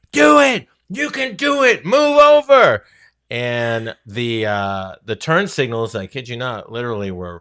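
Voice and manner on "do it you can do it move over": very high, shrill, very loud top-of-lungs yell. Retelling shouting at a self-driving car in traffic: retelling a yell at top of lungs. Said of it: "I'm yelling at the top of my lungs".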